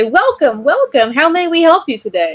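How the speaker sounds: high, joyful, said smiling. A game master voices Aarakocra greeting a visitor, smiling. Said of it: "they smile and say".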